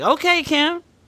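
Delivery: high, impressed "okay".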